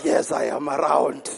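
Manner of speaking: very low, deep, creaky, softly rasping accusing voice. Speaker retelling God's exchange with the devil about Job, the devil's voice. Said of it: "Did I sound like the devil?".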